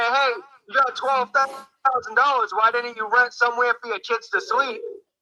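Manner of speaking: normal talking voice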